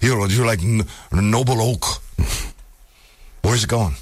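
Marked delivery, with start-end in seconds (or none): 0.0-1.8 put-on Russian accent. Retrying a joke pitch after a failed first attempt; put-on Russian accent. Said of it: "it takes me a little bit to get into that".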